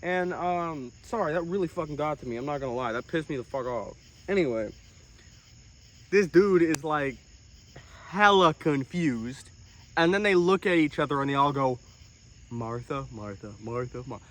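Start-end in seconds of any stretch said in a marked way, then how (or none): 12.5-14.2 very hushed, low, very quiet murmured mumbling. Retelling how a group of people looked at each other, imitating group mumbling. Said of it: "all mumbling like an agreement".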